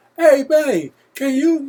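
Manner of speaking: very loud, very high, drawn-out holler. Showing how he calls to someone in another room: calling out loudly. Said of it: "if I'm yelling at Kristen".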